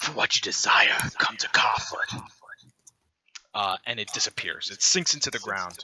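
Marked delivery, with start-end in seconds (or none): 0.0-2.2 evil, demon-like, whispered demonic voice. Narrating a story where a talking eyeball's voice turns, demonic voice. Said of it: "this time it turns demonic".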